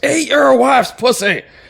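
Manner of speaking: sudden, high, loud, drawn-out scream.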